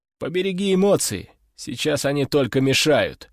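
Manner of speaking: plain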